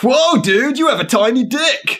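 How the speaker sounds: very high, squeaky surfer dude voice. Trying out a line for characters, giving them a surfer dude voice. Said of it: "made them sound like surfer guys".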